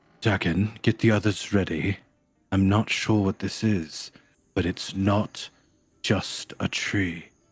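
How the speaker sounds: forced stage whisper, just above a whisper. Speaking in character, warning dakin to get the others ready: forced whisper, a little louder. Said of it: "sort of a forced whisper, a little louder than a whisper".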